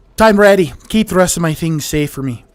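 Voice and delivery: attempted Nord accent, woman's voice. Voicing a game character's dialogue lines: put-on Nordic woman's accent. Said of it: "I'm so sorry about this accent".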